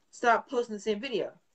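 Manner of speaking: plain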